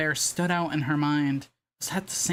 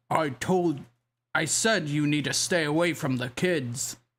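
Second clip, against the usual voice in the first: booming, low, deep, bassy robotic voice. Narrating a story, the bear animatronic warns a security guard: deep robotic voice. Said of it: "a deep robotic, bassy voice boomed from the bear".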